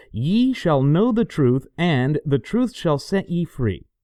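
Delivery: ordinary delivery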